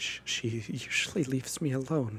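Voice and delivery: shaky, trembling, wavering, unsteady voice. A character just picked up by a rescuer answers her, in a shaky voice. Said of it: "says on a shaky voice".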